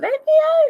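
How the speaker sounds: very high, tiny jack-in-the-box toy voice. Retelling what an EVP recording said, in a little jack-in-the-box voice. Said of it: "little Jack in the Box voice".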